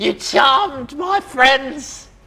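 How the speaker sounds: piercing high creature voice. Voicing a kobold who attacks a player: piercing high kobold voice.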